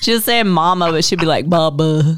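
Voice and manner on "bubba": congested, stuffed-up, blocked-nose voice. Imitating how a woman said a name, in a stuffy-nosed voice. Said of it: "because her should be all stuffy".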